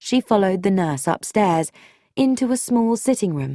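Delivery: ordinary delivery, nothing marked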